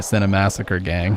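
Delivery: ordinary talk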